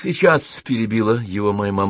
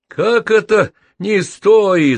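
booming, very high, slow, drawn-out roar; 10 semitones higher, 6 dB louder than usual. A man objects after the narrator's mother hushes the grown-ups; thundering. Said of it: "загремел длинноволосый бородатый детина".

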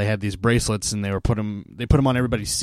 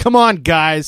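mock very loud, high-pitched, angry, exasperated tone; 7 semitones higher, 8 dB louder than usual. Retelling how the team's PA announcer called the fans' penalty: imitating a pissed-off PA announcer. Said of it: "so pissed off at these idiotic people".

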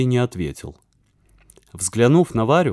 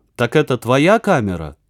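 plain reading voice

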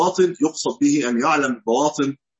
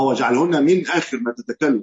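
من stressed with a falling pitch. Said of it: "من آخر، مش آخر".

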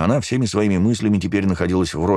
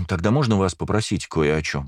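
ordinary delivery, nothing marked

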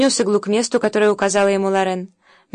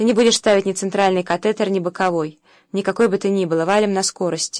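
ordinary delivery, nothing marked

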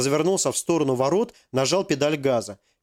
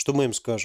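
plain reading voice

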